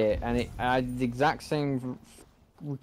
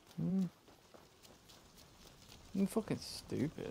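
whispered, hushed, fed-up, annoyed grumble; 6 semitones higher, 14 dB quieter than usual. Ranting about a finicky part of the game: really annoyed. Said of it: "Sorry, I'm really annoyed at that".

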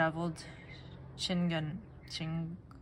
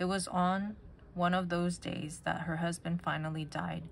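plain reading voice

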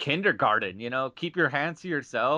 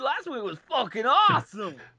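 put-on surfer bro voice, higher; 10 semitones higher than usual. Imitating a fan who only likes the movies: surfer bro Christopher Walken voice. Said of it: "that last voice sounded like a surfer bro Christopher Walken".

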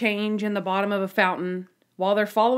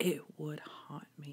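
put-on super serious tone, lower, much quieter; 6 semitones lower, 15 dB quieter than usual. Retelling a story, quoting a man's answer to a woman, acting out super seriousness. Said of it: "He gets super serious".

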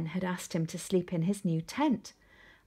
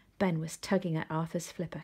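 usual speaking voice

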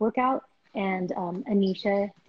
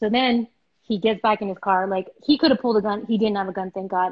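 ordinary talk

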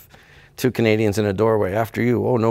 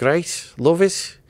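high-pitched Liverpool accent; 7 semitones higher than usual. Recalling how his family used to talk, in a Liverpool accent. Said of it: "We had a Liverpool accent talk like that".

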